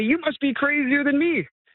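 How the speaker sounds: put-on old man voice, high-pitched hollering yell. Retelling an old man at a Tim Hortons yelling at him: retelling a yell. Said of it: "he yells at me".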